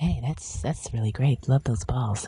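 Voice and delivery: soft, dry on-air public-radio host voice. Mocking how the ladies on a radio segment sound, in an NPR-style voice. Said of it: "how those ladies seriously sound just like N P R".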